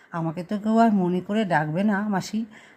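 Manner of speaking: normal talking voice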